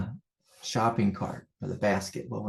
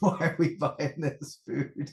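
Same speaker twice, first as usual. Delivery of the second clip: mock yell, pitched up; 6 semitones higher than usual. Retelling a mix-up with the chips at the store: imitating his own yelling. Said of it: "I'm yelling at my daughter and my wife".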